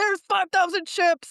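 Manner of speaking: very high, furious, insistent angry shout. Retelling a film scene where an officer is not believed: imitating an angry shout. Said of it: "he's just so mad that he's not being taken seriously".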